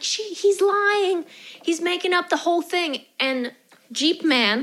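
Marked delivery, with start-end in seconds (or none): 0.0-3.0 high-pitched screaming. Retelling a woman screaming at a confused man, imitating someone screaming. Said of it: "she's screaming at him like".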